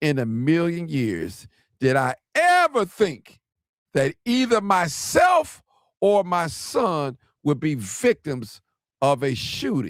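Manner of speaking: slow, deliberate, unhurried reading-aloud pace. Reading a woman's own words aloud to an audience, reading slowly. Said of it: "I'm reading this slow".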